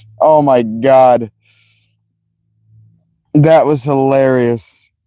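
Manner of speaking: words breaking up through hard laughter. Reacting to a funny moment, laughing hard while talking. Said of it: "I'm laughing so hard I just hurt".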